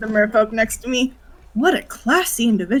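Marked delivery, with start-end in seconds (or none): 1.5-2.8 whispered from the side of the mouth. Whispering in character to the merfolk beside you: whisper from side of mouth. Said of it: "whisper from the side of my mouth".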